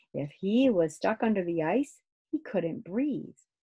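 usual speaking voice

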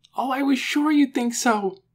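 crying out with relief, high-pitched. Lena answers him after he agrees with her; relieved exclamation. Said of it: "Lena cried".

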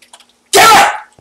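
shouting. Announcing during play, before apologizing for the noise: yelling. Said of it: "I should stop yelling".

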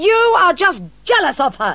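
shrill, very high-pitched, really angry, furious shouting. Carlo shouts back at Ruth in their argument, shouting, really angry. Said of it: "Carlo shouted, really angry now".

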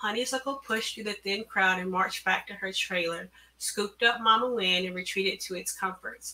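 ordinary delivery

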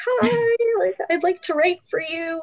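very high, small, squeaky voice. Retelling asking to write for the Gateway, in a tiny squeaky voice. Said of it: "in my tiny little squeaky voice".

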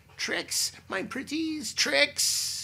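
very shrill, very high, very loud, drawn-out cackle. Narrator reading a woman reaching the stiffly lying chicks: cackling. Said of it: "she cackled".

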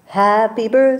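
ordinary delivery, nothing marked

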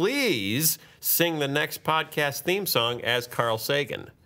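normal talking voice

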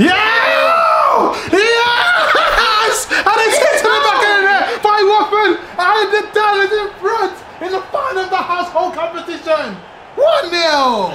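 ecstatic, high, loud yell.

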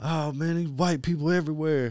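high, loud, joking shout. Retelling joking around in a hotel lobby, imitating someone yelling. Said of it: "And then he starts yelling".

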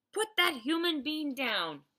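urgent, commanding, very loud, high-pitched shout. A giant orders a flesh-eating giant holding a soldier: shouting. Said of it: "the BFG shouted".

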